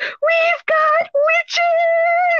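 high, excited shout, final word stretched. Retelling how a woman called out to her husband: imitating a delighted call-out. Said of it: "Like, it was the best thing on the planet".

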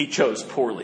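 acted-out flat deadpan. Retelling the ancient knight's line as a man turns to dust, retelling a deadpan line. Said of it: "deadpanned this line".

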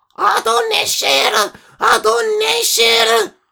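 small, tiny, little calling voice. Narrator reads a mole calling out to a resting eagle, small shrill voice. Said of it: "קול צווחני וקטן".

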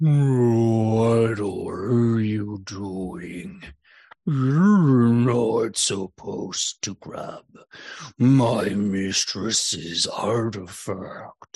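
very slow giant voice with drawn-out "what". Voicing a marsh giant scolding a player for grabbing an artifact: marsh giant voice. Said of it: "and the voice".

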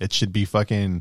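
normal talking voice

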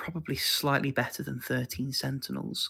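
hushed, confiding whispered aside. Ranking a favorite game among others, whispering. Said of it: "I'm gonna whisper it".

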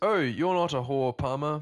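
put-on very loud, belted, silly English accent. Quoting what Brooklyn Decker says to Palmer, in a really silly English accent. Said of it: "a really silly English accent".

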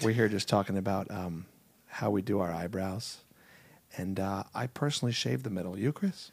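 gentle slow radio announcer voice. Pretending to host a radio show together: mock NPR host voice. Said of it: "You and I could do an N P R show".

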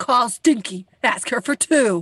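loud, slow, drawn-out angry voice. Repeating a man's line from the story, mock-angry voice. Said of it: "you can't say that in an angry voice".

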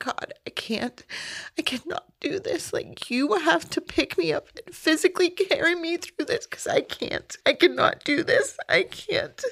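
mock very high, broken, desperate pleading cry. Retelling crying out to God on the shower floor: retelling screaming out in despair. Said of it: "I just was screaming out".

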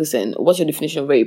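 usual speaking voice

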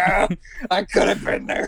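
put-on sour, bitter, regretful, rueful lament. Imagining the other speaker living in Wisconsin, imitating a bitter person. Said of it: "just like".

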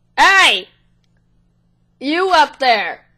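loud goblin voice hollering. The narrator voices a goblin on a warg calling up the hill; goblin shouting. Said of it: "shouts and goes".

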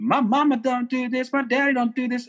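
put-on very high, childish little-kid voice. A parent talks about kids' behavior at other homes, mimicking a kid. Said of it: "I'm mimicking the kids who do this".

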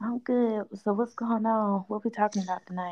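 hushed whisper. Joining a conversation and asking what the topic is: whispering. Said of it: "You whispering and shit".

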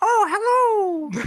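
very high, loud, squeaky voice with stretched "oh". Voicing a player's Mr. Mime Pokemon, in a Mickey Mouse voice. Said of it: "sound like fucking Mickey Mouse".

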